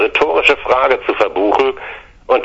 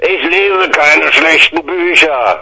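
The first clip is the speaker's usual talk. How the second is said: slow, bellowing roar; 6 semitones higher, 3 dB louder than usual. An uncle arguing with the narrator over a book, bellowing. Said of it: "brüllte Onkel Heinz".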